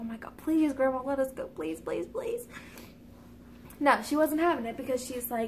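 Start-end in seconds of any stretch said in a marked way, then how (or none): 0.0-2.5 mock desperate pleading, please repeated over and over. Retelling begging someone's grandma to let them go, imitating their own pleading. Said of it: "We tried pleading with her and just begging".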